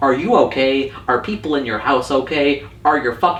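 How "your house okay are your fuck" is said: normal talking voice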